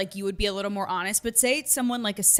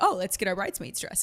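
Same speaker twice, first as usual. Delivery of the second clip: ordinary talk, nothing marked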